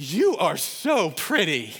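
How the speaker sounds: loud, very slow, gushing, sing-song blurted delivery. Retelling a daughter's remark to a woman in a store: imitating a loud exclamation. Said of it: "Just so loud".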